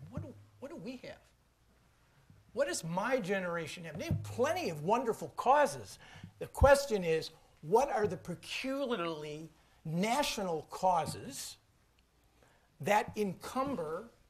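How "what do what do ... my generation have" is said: mournful, plaintive, sorrowful voice. Retelling what a woman said to him, imitating a plaintive voice. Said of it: "in a plaintive voice and said".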